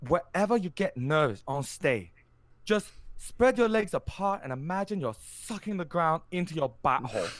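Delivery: high, put-on Japanese accent. Retelling a stage-fright speaker's advice at a master class: imitating a japanese accent. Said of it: "I'm gonna do an accent here".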